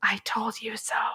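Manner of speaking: soft, under-the-breath whisper. Describing marketing people rushing a game out before Christmas, whispered.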